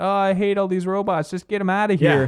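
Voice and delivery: mock screaming. Recapping a character in a TV episode: mock screaming. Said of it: "she is screaming like".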